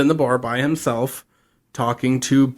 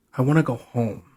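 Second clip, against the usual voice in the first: mock, on the verge of crying. Retelling a scene where Sam is asked what he wants: imitating Sam almost crying. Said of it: "literally almost starts crying".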